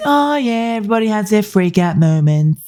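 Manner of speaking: high, mocking, put-on breezy voice. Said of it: "And she says".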